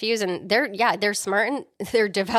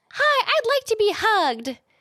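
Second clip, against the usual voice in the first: very high, squeaky talking toy doll voice; 13 semitones higher than usual. Retelling a movie scene where the doll fools Karen: Chucky's Good Guy doll voice. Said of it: "his, um, good guy voice and says".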